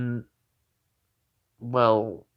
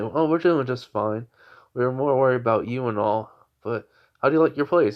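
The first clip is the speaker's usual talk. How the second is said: ordinary talk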